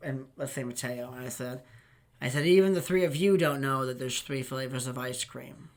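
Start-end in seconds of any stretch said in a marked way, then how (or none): none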